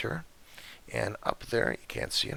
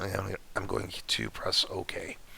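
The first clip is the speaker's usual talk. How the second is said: voice cutting out, dropping to a whisper. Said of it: "my voice has been going on and off".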